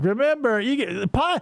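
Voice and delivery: slow, serious, earnest non-cartoon voiceover narration. Retelling a cartoon show's intro disclaimer: imitating a serious-sounding voice. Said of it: "this serious sounding non-cartoon voice".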